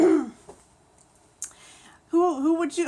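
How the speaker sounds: laughing while talking. Starting to ask viewers a question, laughing while talking. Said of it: "I can't stop laughing".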